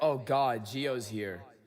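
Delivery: put-on mean, nasty-sounding voice. Imitating how Randy greets the speaker: imitating Randy being mean. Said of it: "she's so mean to me".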